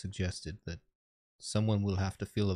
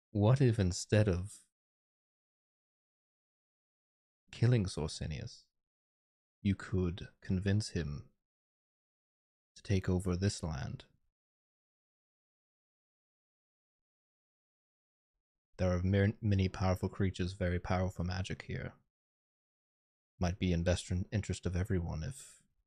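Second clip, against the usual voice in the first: low, hushed voice, speaking lower. Role-playing a character who notices someone taking notes, in a lowered voice. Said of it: "I lower my voice".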